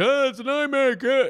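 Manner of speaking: very high, loud, drawn-out, squeaky, booming alien puppet voice. Trying to imitate an actor in a commercial, it comes out as: accidental Alf impression. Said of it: "That was my Alf impression".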